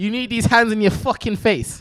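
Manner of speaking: put-on British-accented leprechaun voice. Voicing a British leprechaun refusing peanut butter: British leprechaun voice. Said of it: "you've turned her British".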